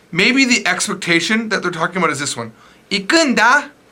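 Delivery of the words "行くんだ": very happy, cheerful, bright, pitched-up tone. Japanese lesson on how tone changes meaning: very happy tone on 行くんだ. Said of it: "Notice how it's very happy".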